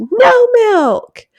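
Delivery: put-on very high, shrill, loud toddler tantrum scream. Describing what she does when handed her milk, the speaker imitates her screaming. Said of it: "throws and screams".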